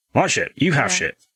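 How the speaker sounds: fed-up, impatient, irritated character voice. Voicing a character who claims the ship and tells them to leave: impatient character voice. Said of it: "He is getting impatient with you".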